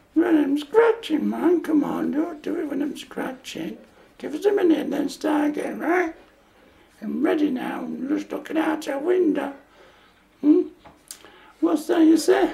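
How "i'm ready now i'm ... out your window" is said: very low, swooping Yorkshire accent slipping in. Making a video of their dogs and talking to one, slight Yorkshire accent. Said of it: "You got your Yorkshire voice back there".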